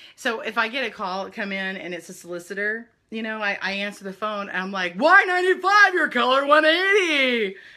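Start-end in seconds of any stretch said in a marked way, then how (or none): 5.0-7.5 loud, pitched-up on-air radio DJ voice. Retelling answering solicitor calls: radio DJ voice. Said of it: "use my radio voice".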